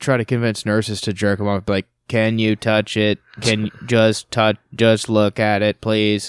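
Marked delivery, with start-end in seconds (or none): 2.1-6.3 put-on robotic voice, much slower. Speaker retelling how a man spoke to his nurses, imitating a robot voice. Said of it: "with his robot voice".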